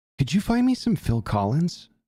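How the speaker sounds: furtive, conspiratorial, low voice. Retelling a man at a tattoo shop asking so nobody could hear, imitating a hushed low voice. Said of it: "Just like real low voice".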